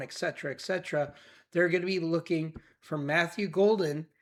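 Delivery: plain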